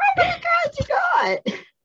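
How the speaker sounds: high, loud, squeaky angry outburst. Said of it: "his voice got so squeaky".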